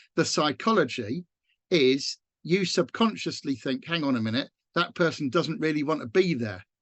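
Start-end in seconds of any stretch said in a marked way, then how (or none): none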